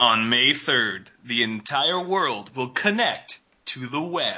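big movie trailer announcer narration voice. Reading a movie tagline for others to identify, in a movie trailer announcer voice. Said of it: "Movie guy voice".

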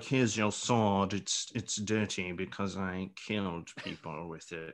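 low, hushed, strange, unplaceable put-on voice. Watching a scene, a viewer quotes a character handing over a sword, odd put-on voice. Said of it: "I don't know what that voice is".

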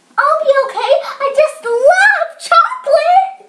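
high, pleading, begging voice. A nephew answers his aunt's objection, begging. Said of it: "begged Hayden".

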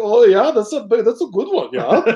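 mock German accent. Retelling what someone said, in a mock german accent. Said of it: "That's exactly what every German sounds like".

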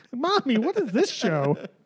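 put-on, high small child voice. Imagining an underage listener finding the show, the speaker is imitating a young child. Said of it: "hope we have like an underage listener".

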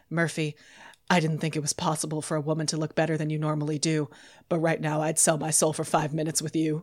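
soft, utterly devoted, adoring and earnest voice. Retelling a scene where Carl turns to Murphy, imitating Carl, deeply devoted. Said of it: "in his deeply devoted voice".

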